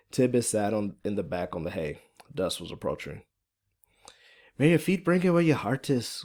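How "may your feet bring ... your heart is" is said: put-on higher-pitched, thick, strong Irish accent. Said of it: "Fiona's, uh, Irish accent is pretty thick and strong".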